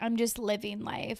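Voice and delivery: fake creaky vocal fry voice. Retelling a recent trip, doing a Kourtney Kardashian impression. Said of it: "my best Kourtney Kardashian impression".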